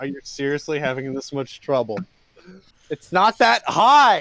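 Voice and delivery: loud, impatient, fed-up, exasperated scolding tone. Describing Alex's reaction in the game scene, voicing him: impatient exasperated Alex voice. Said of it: "tapping his foot like".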